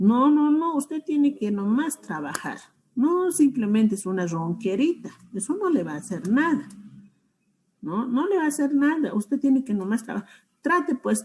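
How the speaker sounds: high-pitched, rapid, dismissive delivery.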